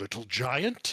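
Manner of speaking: strange, puzzled, curious, wondering frost giant voice. Voicing a frost giant looking at a player strangely: frost giant, puzzled. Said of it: "he looks kinda at you funnily".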